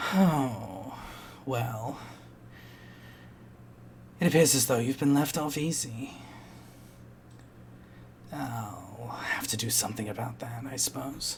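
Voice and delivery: soft, grave, serious voice with echo. Narrating a darkening chamber, voicing an unseen speaker: soft but serious voice. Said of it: "a soft but quite serious voice that echoes".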